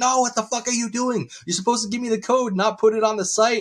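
mock very high-pitched, shrill screaming rant. Acting out scammers yelling at a man faking a gift card redemption, retelling scammers screaming. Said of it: "the scammers will start screaming like".

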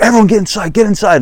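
high, frantic, panicked yell. Retelling ordering the family inside as missiles hit the house: retelling a panicked yell. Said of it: "And I'm like".

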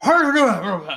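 put-on high, loud, unwell-sounding old man voice. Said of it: "Like that".

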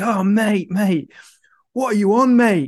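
acted-out, high, wasted, intoxicated bloke's voice. Retelling a festival story, quoting a stranger at the festival: imitating a wasted bloke. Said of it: "was absolutely off his chops".

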